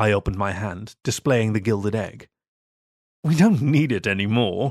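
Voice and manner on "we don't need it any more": scornful, contemptuous, sneering dismissive tone. Narrator reads the young vicar's reply to the narrator: sneering. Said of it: "the young vicar sneered".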